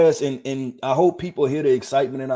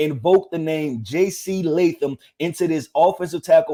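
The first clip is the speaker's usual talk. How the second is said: ordinary delivery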